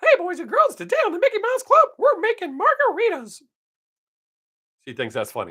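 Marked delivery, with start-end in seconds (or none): 0.0-3.4 bouncy, squeaky delivery. A stand-up comedian shows the bit he does for his granddaughter: Mickey Mouse voice. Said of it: "I don't do the nasty Mickey Mouse for her. I usually go".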